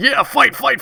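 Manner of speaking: high, gleeful, cheering crow voice.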